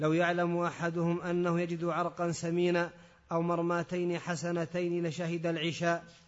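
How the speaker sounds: ordinary delivery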